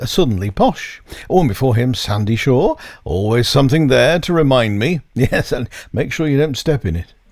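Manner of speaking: ordinary delivery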